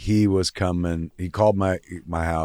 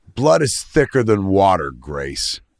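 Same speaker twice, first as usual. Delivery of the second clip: whiny, sing-song, raised, swooping dad voice; 2 semitones higher, 6 dB louder than usual. Retelling a father's line in a family argument: imitating a father's voice. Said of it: "I'll never forget in his voice".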